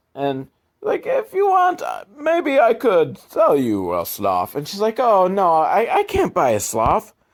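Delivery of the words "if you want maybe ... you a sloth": put-on sing-song Italian accent. Speaker shows off the one accent they can do: stereotypical Italian accent. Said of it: "Stereotypical Italian accent is kind of really the only accent I can do".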